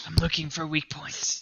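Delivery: quiet, hushed whisper. Speaking in character to a companion, passing on a secret: whispering. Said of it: "I'm whispering to him".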